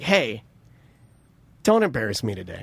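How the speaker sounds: low, dead-serious tone, no joking at all. Retelling what someone said before leaving: imitating someone dead serious. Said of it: "turns to me dead serious".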